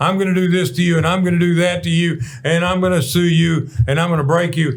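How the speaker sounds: put-on irate ranting and screaming. Retelling how an irate attorney threatens you: imitating an irate attorney screaming. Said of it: "he's screaming at you".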